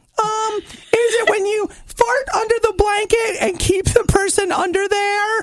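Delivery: very high-pitched put-on voice. Reading a question aloud in Nikki voice. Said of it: "let me see if I can read this in my Nikki voice".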